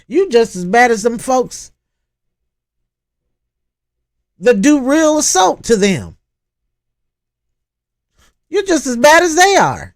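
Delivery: raw screaming, ranting and yelling. Speaker addressing y'all about someone who has gotten all over her: screaming and yelling. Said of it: "I'm sorry for the screaming and the yelling".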